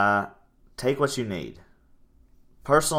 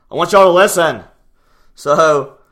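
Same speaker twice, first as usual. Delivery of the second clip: high, loud yell. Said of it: "I know I'm yelling into y'all's face".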